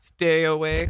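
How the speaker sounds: put-on old-school synthesized 1980s computer voice. Imagining a printed birth-chart reading warning someone off, in a 1980s computer voice. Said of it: "went to like a nineteen eighties computer voice".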